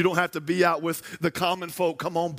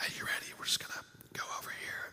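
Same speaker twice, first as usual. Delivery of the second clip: barely audible, very quiet hushed whisper. Retelling a hunting partner's words in the dark woods: imitating a whisper. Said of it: "You whisper. It's whisper talk".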